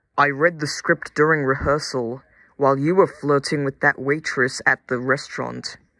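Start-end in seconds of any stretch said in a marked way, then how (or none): none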